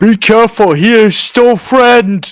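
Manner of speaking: shouting. Warning everyone during a fight that he is still a friend: yelling a warning. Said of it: "I'm going to yell".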